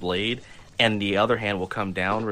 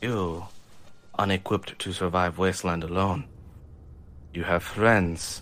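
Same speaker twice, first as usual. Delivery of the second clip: calm, even, steady, focused warrior voice. Playing a samurai super mutant facing the fellow on the floor, calm and focused. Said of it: "calm and collective samurai super mutant to this sort of, / calm and collective samurai super mutant to this sort of, / have one hand reaching for his blade, / His voice is even so much more focused".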